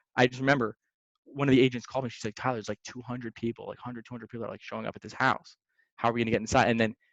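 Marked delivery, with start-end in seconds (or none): none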